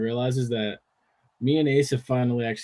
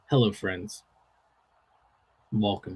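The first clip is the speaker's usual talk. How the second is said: TV sportscaster style announcer voice; 3 semitones lower than usual. Suggesting a baseball intro to the other speaker: Jim Nantz voice. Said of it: "you could sound like Jim Nantz".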